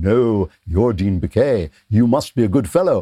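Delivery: mock, fawning, sycophantic chorus of voices. Mocking the people around an editor who agree with him: mocking imitation of agreeing people. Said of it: "everybody around him going".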